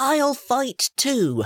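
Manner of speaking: loud, very high-pitched declaiming tone. A child speaks up before the king, proclaiming. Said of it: "Luke proclaimed".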